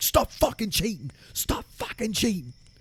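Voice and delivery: furious, very high-pitched angry outburst. Retelling how an angry arm-wrestling opponent stood up: imitating an angry yell. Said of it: "he got really angry about that".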